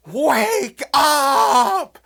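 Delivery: loud high-pitched screaming. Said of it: "start screaming to yourself".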